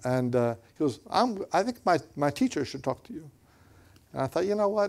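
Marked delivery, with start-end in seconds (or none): 1.1-3.3 put-on Chinese accent, higher pitch. Retelling what a man told him, the speaker quotes him in a put-on Chinese accent. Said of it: "he said it in Chinese accent".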